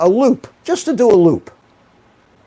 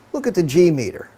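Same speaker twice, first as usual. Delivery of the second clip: ordinary delivery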